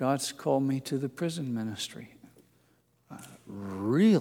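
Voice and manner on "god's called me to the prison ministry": meek, mild, quiet, small voice. Recalling the meekest man he ever met, imitating his quiet, small voice. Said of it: "in that quiet, small voice of his".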